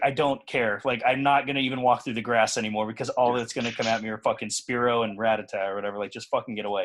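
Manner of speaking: usual speaking voice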